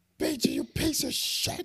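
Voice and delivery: half-voiced, mild, triumphant yell. Retelling finally beating a game boss, retelling a scream. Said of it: "I was screaming at the top of my lungs".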